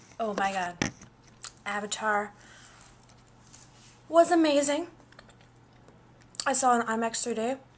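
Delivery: speaking with mouth full, chewing while talking. Talking about a movie just seen in IMAX, talking while eating. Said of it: "Sorry, I'm eating".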